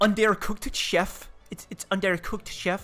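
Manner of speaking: put-on French accent, silly and stupid-sounding. Retelling Philippe taking the food back to the chef, Philippe's French accent impression. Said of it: "he got that stupid French accent".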